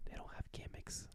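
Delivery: whispering. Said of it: "I'm whispering".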